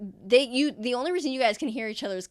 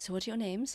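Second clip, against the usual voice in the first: soft muttered aside under the breath; 9 dB quieter than usual. Voicing a character asking names as the group walks: under his breath. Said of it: "under his breath".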